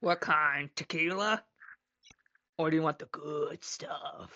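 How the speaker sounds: deep, very low, awful-sounding voice. The narrator voices a golden dwarf offering drinks, in a horrible voice. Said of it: "she has a horrible voice".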